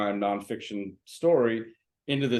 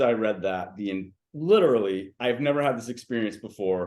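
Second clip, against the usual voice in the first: ordinary delivery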